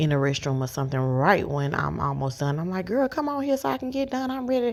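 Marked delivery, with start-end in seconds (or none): 2.9-4.7 play-acted impatient fussing pitched way up, hurried. Retelling urging a child in the restroom to hurry: imitating own fussing. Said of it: "get the fussing".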